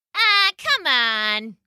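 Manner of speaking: taunting, sneering bully voice. Narrator reading a story, voicing the bully's taunt, Other Rex's sneering voice. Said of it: "came a sneering voice".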